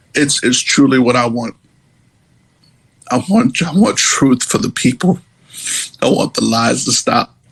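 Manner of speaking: emotional voice, repeating itself, stumbling over words. Speaker saying what they want, after apologizing for getting emotional. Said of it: "I'm sorry, I'm getting emotional".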